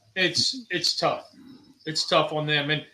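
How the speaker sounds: choked-up voice catching with emotion. Speaker talking about caregivers, getting choked up. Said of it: "I'm getting choked up".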